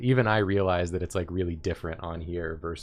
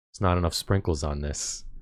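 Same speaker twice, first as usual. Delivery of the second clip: put-on very quiet, hushed voice. Retelling how a woman telling a story spoke, imitating her going really quiet. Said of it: "then she got like really quiet".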